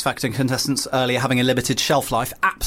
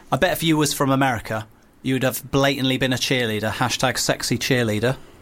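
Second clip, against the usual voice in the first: ordinary talk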